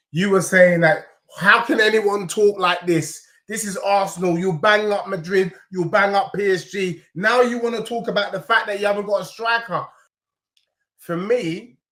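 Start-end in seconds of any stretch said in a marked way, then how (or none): none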